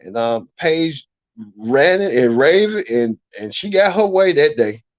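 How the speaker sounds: normal talking voice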